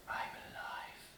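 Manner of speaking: hushed whisper.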